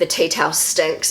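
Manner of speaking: ordinary talk, nothing marked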